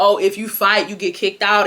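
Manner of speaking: ordinary talk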